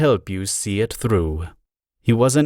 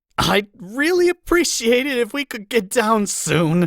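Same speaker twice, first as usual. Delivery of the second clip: choked, strangled, very high-pitched straining voice; 12 semitones higher than usual. Narrator reading a character's plea to get down from the ropes, strangled voice. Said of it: "Spike said in a strangled voice".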